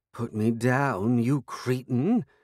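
every word hissed through the teeth, like a cat. Narrator reading the cat Tabitha snapping at someone lifting her carrier: hissing. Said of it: "she hissed".

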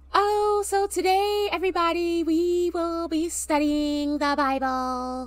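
very slow robotic voice. Retelling how a girl announced Bible study: imitating a girl's robotic voice. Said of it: "she was so robotic. Like, this is how she sound, no lie".

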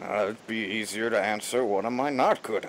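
put-on old, elderly dwarf character voice. Voicing the dwarf heading the expedition, asked what he's good at: old dwarf character voice.

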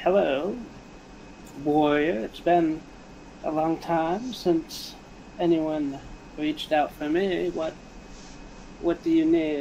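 sly, snide, cunning, sneering dark voice. Voicing the darkness answering a warrior who reached out to it, snide, cunning voice. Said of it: "The snide, cunning voice of the darkness will say".

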